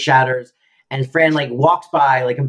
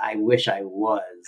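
put-on old woman's muttered aside, lower and quieter; 5 semitones lower, 6 dB quieter than usual. Retelling a sitcom scene, quoting Yetta's aside: imitating Yetta muttering under her breath. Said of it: "under her breath, she goes".

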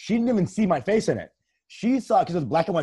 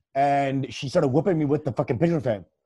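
ordinary talk

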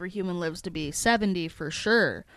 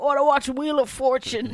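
put-on old man voice, higher and louder; 6 semitones higher, 4 dB louder than usual. Retelling a movie scene, the old baby refusing to play: Benjamin Button as old man. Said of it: "He's like".

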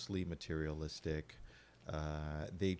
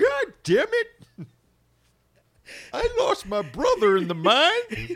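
put-on swooping, very high, very loud old prospector yell; 16 dB louder than usual. Show host riffs as an imagined listener, in an old gold prospector voice. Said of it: "we've lost our prospector audience".

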